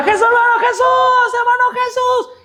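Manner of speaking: shouted delivery. Retelling how a young man called down the street for help: imitating someone shouting. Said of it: "Y él gritaba".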